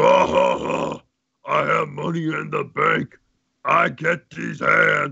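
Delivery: slow, dragged-out, rough, creaky cartoon promo announcer voice. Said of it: "I think you sound like Recoome".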